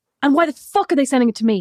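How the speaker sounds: imitated angry yelling. Acting out a boss in a story about invoices: retelling a boss screaming. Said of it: "I don't know why you're screaming at me".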